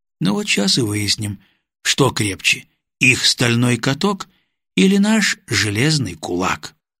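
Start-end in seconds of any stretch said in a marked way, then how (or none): none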